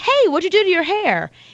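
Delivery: said nicely and warmly. Showing how a question sounds when asked nicely, in a nice friendly tone. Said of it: "even if you say it nicely".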